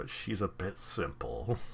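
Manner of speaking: conspiratorial, confiding, gossipy secretive tone. Retelling how a man leans in once she turns her back, imitating a lowered voice. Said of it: "he lowers his voice and leans in and goes".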